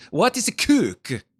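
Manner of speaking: put-on foreign accent that sounds Italian. Character questioning another in a scene, in an accent that sounds italian. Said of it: "Apparently from Italy".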